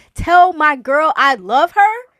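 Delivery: very loud, high, drawn-out terrified shout. Retelling how a terrified climber shouted on a pendulum swing: imitating terrified shouting. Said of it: "He's sitting here shouting".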